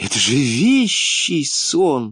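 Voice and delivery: joyful cry, drawn out very slowly. Narrator reads a lady responding to someone's dream: joyful exclamation. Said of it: "радостно воскликнула дама".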